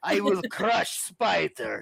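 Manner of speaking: slow, drawn-out, rough, creaky voice. Showing how the character Kraven should speak: Kraven voice as he should sound. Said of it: "Kraven should speak like this".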